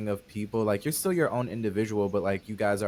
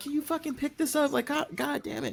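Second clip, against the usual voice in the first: very high-pitched, exasperated, annoyed ranting voice. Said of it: "She's like".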